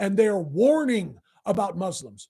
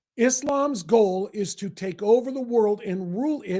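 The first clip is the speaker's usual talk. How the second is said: normal talking voice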